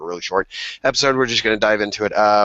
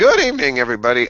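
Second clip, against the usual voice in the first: worn-out, hoarse, raspy, wrecked voice; 4 semitones higher, 3 dB louder than usual. The speaker greets everyone as the stream goes live, with a hoarse, wrecked voice. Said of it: "my voice is wrecked".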